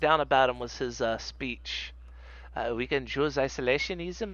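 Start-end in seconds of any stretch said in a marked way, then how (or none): 2.7-4.3 poor put-on French accent. Reading out the notes taken on his speech, in a bad French accent. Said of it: "I can't do a good French accent".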